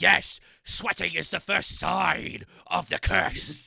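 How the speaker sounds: creaky, rough, slow, drawn-out snake voice. Voicing Borky as a snake in the game: speaking as a snake. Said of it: "Borky says as a snake".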